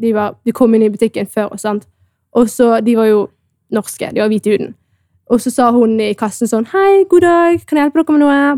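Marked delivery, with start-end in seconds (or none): 6.7-8.4 sweet, nice, polite, pitched-up voice. Retelling how the cashier greeted other customers, imitating her nice voice. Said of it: "med fin stemme".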